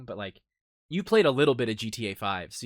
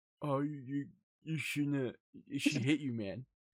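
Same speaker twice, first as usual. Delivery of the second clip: put-on drunken, sloshed, slurred, stumbling speech; 3 semitones higher, 7 dB quieter than usual. Retelling a drunk buddy commenting on a lost fight: imitating a drunk friend. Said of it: "he's, like, shit-faced".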